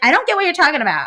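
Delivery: put-on Valley Girl accent. Retelling what a sister replied to an explanation: Valley Girl accent. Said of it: "I have to use a Valley Girl, um, accent for her".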